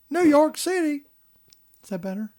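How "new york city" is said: heavy, exaggerated regional twang, very high pitched. Redoing a line with more of a twang: twangy accent. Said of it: "I think I was supposed to say that with more of a twang".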